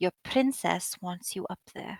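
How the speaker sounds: soft half-whisper, very close to the ear. Voicing a character in the game, the game master half-whispers in the listener's ear. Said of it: "she'll whisper in your ear for this part".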